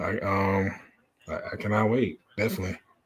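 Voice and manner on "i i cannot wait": ordinary delivery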